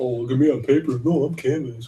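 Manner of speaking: snide, teasing, taunting character voice. Voicing canvas paper's taunt during a mock rant: mocking voice of canvas paper. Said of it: "Says it".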